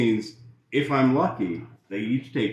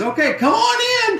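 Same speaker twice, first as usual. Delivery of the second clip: piercing, super shrill, very high-pitched voice; 4 dB louder than usual. Storyteller quoting a woman at a door, in a super shrill, high voice. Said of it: "super shrill, super high voice".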